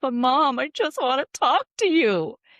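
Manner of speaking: put-on high, loud, tearful, pleading little child voice. Retelling the child's words after he started crying: imitating a crying child. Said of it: "he just started crying".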